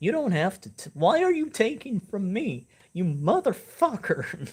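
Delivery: mock furious, shrill, swooping angry outburst. Retelling a streamer getting angry during a game, imitating an angry streamer. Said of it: "see get angry".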